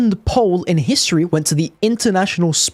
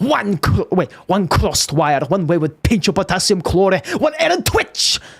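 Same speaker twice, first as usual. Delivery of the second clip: put-on Scottish accent, put on. Showing the one impression he can decently do: Demoman Scottish accent. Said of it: "masked because of the Scottish accent".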